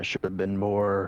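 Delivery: ordinary delivery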